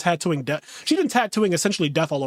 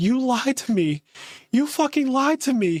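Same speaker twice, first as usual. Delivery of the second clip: put-on angry outburst, higher pitch; 7 semitones higher than usual. Retelling a character's outburst from a tv scene: imitating an angry outburst. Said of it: "she has this outburst where she's like".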